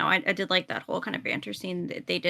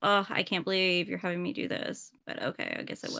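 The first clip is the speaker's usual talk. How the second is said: put-on exhausted, weary voice; 6 dB quieter than usual. Speaker praising what he does with his voice imitates him; imitating an exhausted voice. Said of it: "it just kind of sounds so exhausted".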